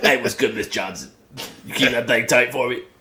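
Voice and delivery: put-on little kid doing pimp talk. A speaker acts out a ten-year-old boy greeting a woman, Billy's third-grade pimp voice. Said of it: "third grade pimp".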